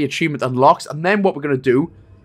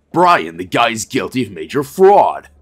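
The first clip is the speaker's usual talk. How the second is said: put-on low American detective accent; 6 semitones lower, 4 dB louder than usual. A player picking the top option in a game, in an american detective voice. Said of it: "That's my best American detective voice".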